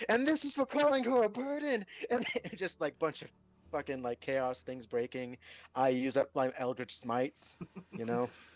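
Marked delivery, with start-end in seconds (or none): 0.1-1.8 high, angry battle yell. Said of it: "they'd hear, like".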